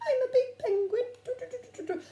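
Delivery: very high, loud, silly penguin voice. Trying the penguin voice a child suggested: penguin voice. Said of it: "I might go like that as well".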